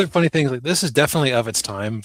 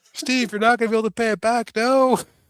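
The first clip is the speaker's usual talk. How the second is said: shrill, very high-pitched, desperate shouting; 11 semitones higher than usual.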